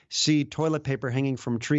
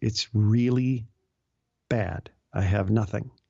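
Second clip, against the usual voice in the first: put-on weepy, crying voice. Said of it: "he's just as weepy as can be".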